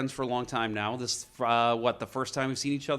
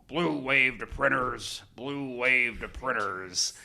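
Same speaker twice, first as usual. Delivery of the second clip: put-on voice of a big, gravelly man. Paging over the store intercom, the speaker imitates Joe's gravelly voice. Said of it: "and I'd use his voice".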